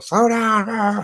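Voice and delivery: put-on high-pitched yelling.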